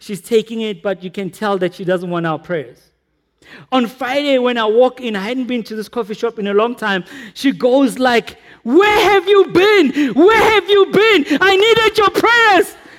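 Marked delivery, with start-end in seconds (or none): 8.6-12.7 play-acted, very high, loud shouting. Speaker retells a coffee shop woman greeting them after a long absence, imitating her shouting. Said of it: "She's shouting like that".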